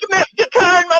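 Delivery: high, loud, tough street-style voice.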